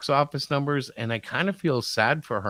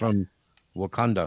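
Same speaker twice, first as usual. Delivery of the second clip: fake Russian accent, much lower; 5 semitones lower than usual. Playing a secret agent in a scene, in a fake Russian accent. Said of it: "You have a Russian accent".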